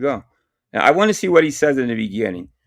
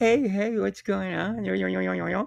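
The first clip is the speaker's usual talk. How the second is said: mock whisper, higher and quieter; 7 semitones higher, 8 dB quieter than usual. Mocking another speaker's greeting: imitating someone whispering. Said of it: "Why are you whispering?".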